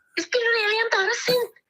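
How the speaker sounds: fake Liverpudlian accent, high and weepy.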